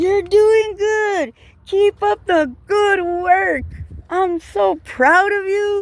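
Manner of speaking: shrill, very high, encouraging cheering yell. Retelling rolling down the window to cheer someone on: retelling a shout out the window. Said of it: "the next day my voice was almost gone".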